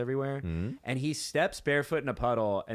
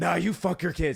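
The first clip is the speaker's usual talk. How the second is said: rough, gruff, rasping superhero yell; 4 semitones higher, 3 dB louder than usual.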